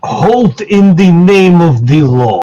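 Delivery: stern, authoritative, commanding shouted yell. In a tabletop game, yelling at a target to stop: commanding yell. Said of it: "like with a commanding voice, yell at him".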